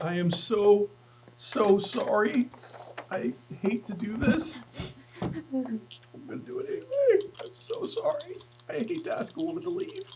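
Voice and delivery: very slow, high, drawn-out, fake tearful, quavering voice. Announcing an attempt to banish a woman, mock choked up. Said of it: "A little choked up. A little tear in my eye".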